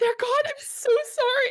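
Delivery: very high, slow, near-tears tearful pleading. Playing her character as a distraction, the speaker delivers a tearful apology. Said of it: "tears are gonna start forming".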